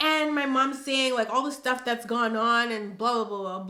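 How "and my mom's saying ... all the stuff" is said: usual speaking voice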